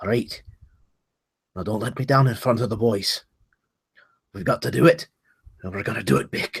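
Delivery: hushed half-whisper under the breath. Playing a dwarf, the speaker half-whispers to his holy symbol. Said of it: "he kind of whispers to it".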